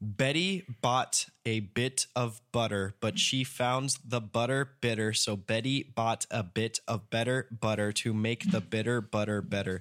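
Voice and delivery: very slow, deliberate, drawn out word by word. Speaker tries the first of two tricky phrases aloud, said very slowly. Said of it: "say this very slowly".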